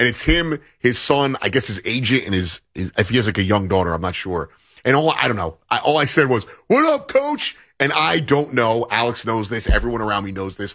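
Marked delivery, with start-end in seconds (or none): 6.7-7.6 acted-out yell, pitched much higher. Speaker recounts greeting a coach from fifteen feet away, retelling a yell. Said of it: "I basically yelled at him".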